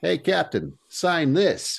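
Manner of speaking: very high-pitched, shouted, jeering yell. Narrating a soldier in the crowd taunting Steve on stage, yelling. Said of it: "a fifth soldier yells".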